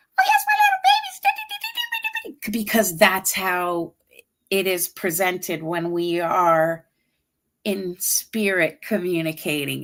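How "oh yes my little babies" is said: put-on very high-pitched cooing baby talk. Demonstrating the voice used when talking to them in spirit, real high-pitched. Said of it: "I have a real high pitched".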